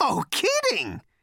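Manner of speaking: high-pitched, startled yelp of surprise. Narrating a character's reaction on hearing another's name, yelping. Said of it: "he yelped".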